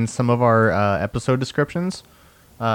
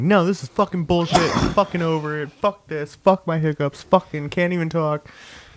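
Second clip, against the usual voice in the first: mock furious, high-pitched angry swearing rant; 6 semitones higher than usual. Retelling own reaction during an earlier recording: imitating own angry rant. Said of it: "I was mad. I was so mad".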